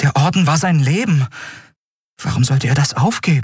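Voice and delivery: stammering in disbelief. She answers the admiral's news, stammering in disbelief. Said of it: "stotterte sie".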